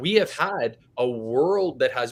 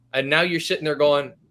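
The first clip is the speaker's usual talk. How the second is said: ordinary talk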